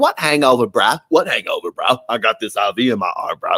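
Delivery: fake British party-boy accent. Repeating the British people's quoted lines, this time in a put-on British accent. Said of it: "so I should have gave them a British accent".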